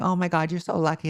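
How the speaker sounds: high, put-on crying, words through sobs. Retelling what was said in a bathroom to a scary woman: imitating own fake crying. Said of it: "I started crying and going".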